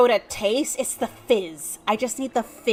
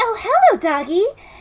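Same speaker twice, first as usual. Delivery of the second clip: very high, loud, put-on childlike little girl voice; 9 semitones higher, 5 dB louder than usual. Starting a conversation as the little girl character, little girl voice. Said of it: "little girl voice".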